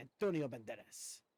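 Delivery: put-on Spanish-accented name pronunciation. Showing how Antonio Banderas says his own name: Antonio Banderas saying his name. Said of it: "That's how he says his own name".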